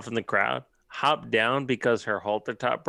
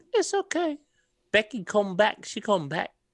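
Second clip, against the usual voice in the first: bad put-on British accent, very high-pitched; 10 semitones higher than usual. Imitating the other speaker's words about Becky: fake British impression. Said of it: "That's my fake British impression".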